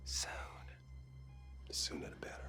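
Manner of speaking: quiet whispering. Answering when they will come to visit, whispering.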